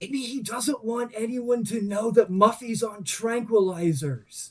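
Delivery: theatrical, high-pitched stage whisper. Voicing a character speaking to another character: stage whisper. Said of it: "stage whisper to Marge".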